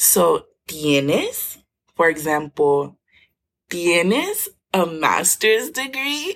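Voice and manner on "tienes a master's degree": questioning rise, pitched higher. Showing how intonation turns tienes into a question: rising question intonation. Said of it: "by changing the intonation of your voice".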